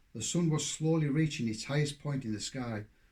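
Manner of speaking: ordinary delivery, nothing marked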